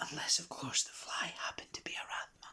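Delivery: hushed, secretive whisper. Reading a story aloud, a character hints at a secret: lowered voice to a whisper. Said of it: "Lee Stubbs lowered her voice to a whisper".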